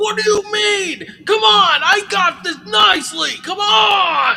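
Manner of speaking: very high, loud, furious yelling, drawn out. Recapping a scene, quoting a man at the ropes yelling at another, retelling a yell. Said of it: "starts yelling at him".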